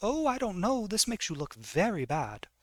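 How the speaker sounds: haughty, pompous, sing-song put-on British accent. Narrator voicing her reply to Featherstone: pompous British voice. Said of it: "in her British, pompous British voice".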